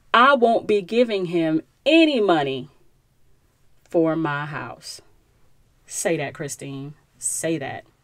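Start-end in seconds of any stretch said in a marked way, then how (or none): 0.1-5.0 put-on firm voice, slow and deliberate. Quoting Christine's line about her house: Christine's sister voice. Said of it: "I'm gonna say that again".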